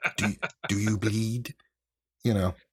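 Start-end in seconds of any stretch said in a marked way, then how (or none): 0.2-1.5 put-on faint whisper, barely not British accent. Retelling a movie scene where he is choking Batman: put-on barely-not-British whisper. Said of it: "he says in a barely not British whisper".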